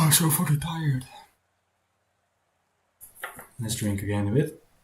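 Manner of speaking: rough, raspy, hoarse voice. Calling out race results, stopping to drink again: raspy voice. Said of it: "My voice is getting raspy".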